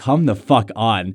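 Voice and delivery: slow, mad, completely fed-up exasperated voice. Retelling the girlfriend's reaction to twenty minutes of indecision, retelling an exasperated girlfriend. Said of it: "my girlfriend got so mad at me".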